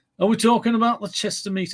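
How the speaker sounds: unconvincing Northern accent. Asking about the Chester meet, put on a bad Northern accent. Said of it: "that's not a very good Northern accent".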